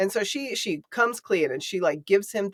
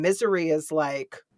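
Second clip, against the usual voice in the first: ordinary talk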